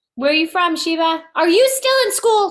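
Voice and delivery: motherly tone. Greeting a newcomer joining a live chat: mommy voice. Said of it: "Look at me with my mommy voice".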